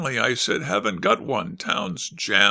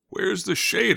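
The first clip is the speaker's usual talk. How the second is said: groaning, high, miserable moan, feeling lousy; 6 semitones higher than usual. Feeling lousy in bed, the narrator calls out to Arth, moaning. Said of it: "I moaned".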